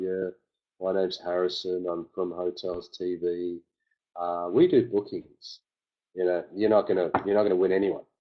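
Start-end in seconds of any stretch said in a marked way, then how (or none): 0.0-5.6 slow, flat, dull, lifeless monotone. Coaching someone on calling people, showing the wrong way: flat monotone. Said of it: "monotone like".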